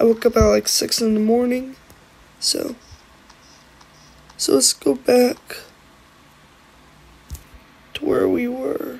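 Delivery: sounding tired. Talking to viewers after waking up at six in the morning, sounding tired. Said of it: "sorry if I sound tired".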